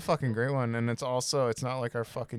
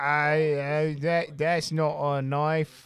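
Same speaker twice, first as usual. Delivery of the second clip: put-on loud British accent; 4 semitones higher, 6 dB louder than usual. Doing voices on request, quoting a film line: Crocodile Dundee voice sounding British. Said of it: "that's more British than fucking Crocodile Dundee".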